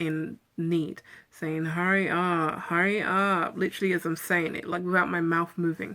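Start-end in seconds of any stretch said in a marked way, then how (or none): 1.6-3.6 very slow, drawn-out, pleading moan. Retelling a disembodied voice she heard, imitating a moaning voice. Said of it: "Like a moaning voice".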